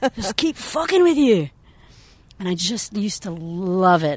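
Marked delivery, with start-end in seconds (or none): 0.2-1.5 put-on Scottish accent, higher and louder. Retelling a parent's golf joke in a Billy Connolly accent. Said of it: "putting on his kind of Billy Connolly accent".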